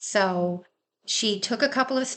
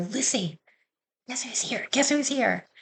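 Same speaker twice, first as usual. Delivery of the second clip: re-enacted whisper, higher pitch; 5 semitones higher than usual. Retelling whispering to lucy as her parents come in: retelling a whisper. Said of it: "I'm whispering to her".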